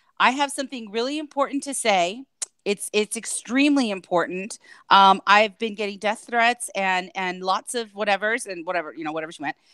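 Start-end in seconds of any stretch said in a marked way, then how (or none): none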